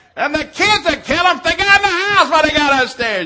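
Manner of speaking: loud high-pitched yelling.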